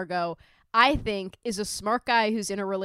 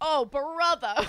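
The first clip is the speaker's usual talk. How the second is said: put-on old-timey Brooklyn character voice; 6 semitones higher than usual. Describing a scene, the speaker quotes a woman's aside in an old-timey brooklyn accent. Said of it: "like old timey Brooklyn like character actor bit".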